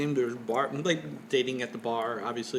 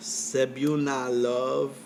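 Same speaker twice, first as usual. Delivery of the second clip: slow, drawn-out Filipino accent. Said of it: "which I did not say in an accent, but I did".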